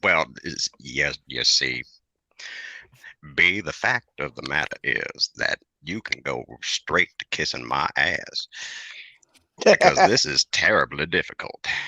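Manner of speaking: slow, drawn-out Southern drawl. Answering a friend's teasing, still in the impression: Morgan Freeman impression, Southern. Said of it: "Now you're sounding more like Morgan Freeman".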